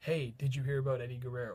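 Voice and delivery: mock-sarcastic tone. Retelling what a guy named Derek said walking into class: imitating Derek's sarcastic voice. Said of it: "in the most sarcastic voice possible".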